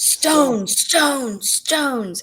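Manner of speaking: mock urgent, insistent, loud, high-pitched demanding voice. Retelling how someone burst in: imitating someone loudly demanding. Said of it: "loudly demanding".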